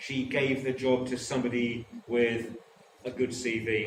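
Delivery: ordinary talk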